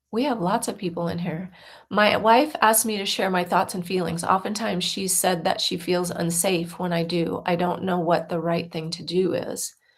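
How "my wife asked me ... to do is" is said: normal talking voice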